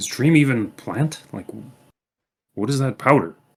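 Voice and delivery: speaking quietly. Role-playing character talking with a companion, in a lowered voice. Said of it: "I'll lower my voice".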